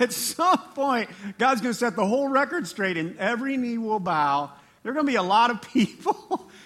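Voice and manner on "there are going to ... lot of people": louder, laughing and chuckling mid-sentence. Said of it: "Sorry, I shouldn't laugh".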